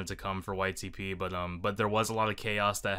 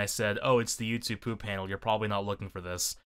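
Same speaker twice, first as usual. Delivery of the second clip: normal talking voice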